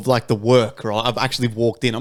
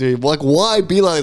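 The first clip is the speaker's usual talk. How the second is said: ordinary talk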